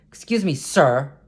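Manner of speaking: mock, snide, talking-down, sarcastic politeness. Quoting a woman who walked into him off the elevator, mock-sarcastic, condescending. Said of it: "kind of sarcastic and condescending".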